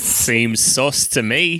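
put-on New Zealand accent. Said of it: "you're doing New Zealand".

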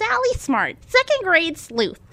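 put-on very high, loud child voice, belted in sing-song. Describing an old competition piece, announcing its title in the Sally Smart character voice. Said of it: "I'm gonna do it in the voice".

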